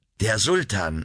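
ordinary delivery

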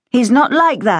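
hot, indignant, heated, high-pitched voice. Narrator voicing Barbara answering Simon's mocking about her father, said hotly. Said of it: "Barbara said hotly".

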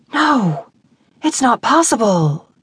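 whispered with emphasis. Ava, as understanding dawns while looking into his eyes, whispers emphatically. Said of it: "Ava whispered emphatically".

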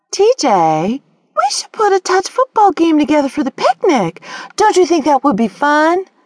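sickly-sweet, sugary, very high voice. A character suggests a picnic football game to a boy, in a sugary voice. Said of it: "Mimi's sugary voice grated on Grace's last nerve".

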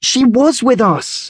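very high, slow, drawn-out crying out. Isis answers Callie, who doubts she saw Angel: crying out. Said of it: "cried Isis".

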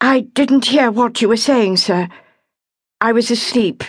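clear, controlled, slightly high. She answers the man she calls sir, in a clear, controlled voice. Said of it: "She said in a clear, controlled voice".

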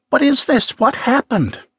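very high, frightened, nervous voice. In a story of an attack, Zoe asks what happened, nervously. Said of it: "Zoe asked nervously".

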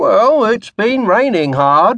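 feeble, half-hearted. Hanson answers Ramage as he starts clearing away the plates, said lamely. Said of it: "Hanson said lamely".

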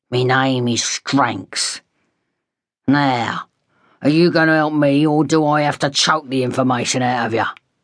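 growled, menacing tone. Narrator reads a man confronting a hospital clerk, growling. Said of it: "the man growled".

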